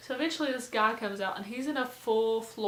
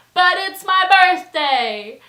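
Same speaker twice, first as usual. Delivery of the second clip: put-on escalating shout, slower; 8 semitones higher, 16 dB louder than usual. Retelling him insisting after she asks to turn it down: retelling a yell, getting louder. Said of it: "he just kept saying this and getting louder".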